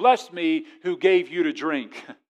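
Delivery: loud call. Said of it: "he would say with a loud voice".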